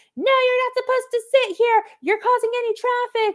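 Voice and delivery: put-on very high scolding yell. Retelling how a lady at an event told them to move: imitating a lady yelling. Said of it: "started yelling at us saying".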